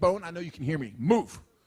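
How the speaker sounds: ordinary talk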